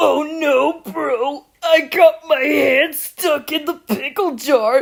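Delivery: put-on voice, very slow, every word drawn out. Imitating a guy from a TikTok video: Muscle Man voice. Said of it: "trying to do the voice for Muscle Man".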